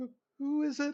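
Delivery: very high, frightened, panicked voice. Game master voicing someone behind a door, panicked, higher voice. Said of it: "The panic in the in the voice gets a little bit higher".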